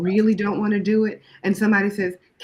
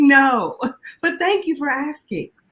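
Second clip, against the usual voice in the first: light, pleasant, courteous, pitched-up voice; 5 semitones higher than usual. Retelling a reply to a boss asking for more work: smiling refusal. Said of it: "With a smile".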